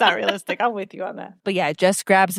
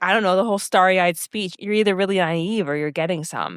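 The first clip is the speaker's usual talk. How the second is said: normal talking voice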